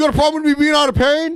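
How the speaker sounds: mock screaming, very high, over everyone. Imitating Boogie repeating himself to drown someone out: imitating Boogie screaming. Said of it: "screaming over you".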